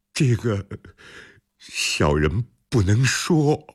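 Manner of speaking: hesitant, faltering, stammering. A personal bodyguard, pressed by his master about a letter he sent, answers stammering. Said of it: "横莲支支吾吾地说".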